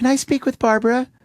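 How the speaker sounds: very high, fake, put-on woman voice. Retelling a prank call to a back office: imitating a put-on woman voice. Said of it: "woman voice".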